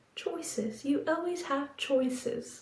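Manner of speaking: put-on soft, gently spoken English accent. Recalling a woman's words, say them in a soft English accent. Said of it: "In the softest voice".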